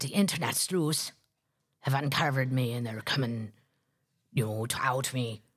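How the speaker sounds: put-on low-pitched voice in a Scottish accent. Retelling what a show guest said in an interview, in a Fiona Harvey accent. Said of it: "I can't keep doing that accent".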